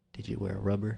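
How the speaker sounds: soft, hushed, voiceless half-whisper. Speaker retelling what a man half-whispered to them up close, retelling a half-whisper. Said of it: "So he whispers".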